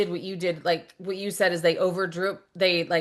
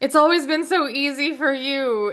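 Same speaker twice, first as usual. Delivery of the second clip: mock weepy, high, tearful crying voice; 6 semitones higher than usual. Retelling a scene where Anastasia cries at the well: imitating Anastasia crying. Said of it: "she's crying and she's like".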